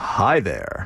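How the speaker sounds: smooth, silky, dulcet tones, great voice. Asked on air to greet the listeners, he says hello in smooth, dulcet tones. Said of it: "Say hello to the listeners with that great voice of yours".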